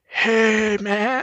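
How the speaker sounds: jokey, high, put-on surfer dude voice. Retelling how someone jokingly read a part in a scene: mock surfer voice. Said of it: "doing mock surfer voices".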